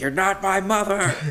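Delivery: mock shrill, high, raging screaming outburst. Retelling a movie scene where he screams at another character: mock screaming. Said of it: "he's like screaming at Reagan".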